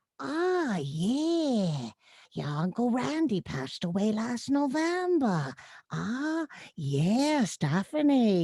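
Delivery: put-on very slow, elderly old lady voice. Showing the villager voice based on a Polish aunt, Aunt Manya old lady voice. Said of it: "this old lady voice".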